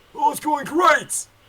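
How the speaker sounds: shrill yelling, very high and very loud. Answering another character in a role-play scene: yelling. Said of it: "Why are you yelling at me?".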